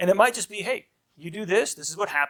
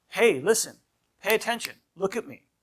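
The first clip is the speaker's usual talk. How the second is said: firm, stern, serious disciplining voice; 5 semitones higher than usual. Demonstrating the serious voice as the first level of discipline, in a serious voice. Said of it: "is your serious voice".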